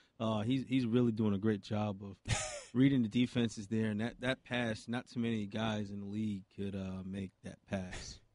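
bored, unenthused, flat "meh" voice.

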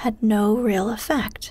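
plain reading voice

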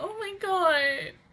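teary, tearing up, high-pitched crying gasp. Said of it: "I already feel myself tearing up".

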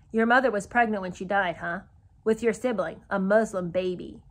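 plain

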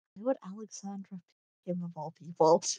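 low-pitched mutter. Voicing Aurelia in a tabletop scene, muttering under her breath. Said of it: "mutters that under her breath".

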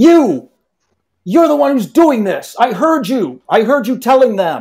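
very high, loud, furious, angry yell. Voicing a burly man shouting across a hall at someone: angry shout. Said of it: "shout, uh, in an angry voice".

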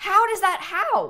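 astonished, high, loud, gasping disbelief. Streamer reacts to a weird visual glitch in the game, amazed gasp.

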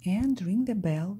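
plain

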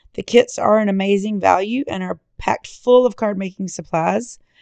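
hoarse, worn-down voice.

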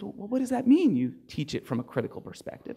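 hushed, quiet, murmured aside. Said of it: "the judge says in hushed tones".

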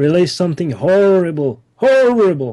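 put-on high-pitched elderly man character voice. A game master voicing an old man speaking to the party, in an old man voice.

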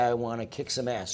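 normal talking voice

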